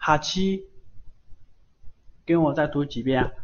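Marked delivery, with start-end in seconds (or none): 0.0-0.7 pitch climbing up steadily across 哈七. Teaching the reading of a kana word, with rising pitch across 哈七. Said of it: "这个单词它是往上升的".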